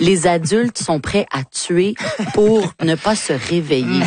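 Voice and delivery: ordinary talk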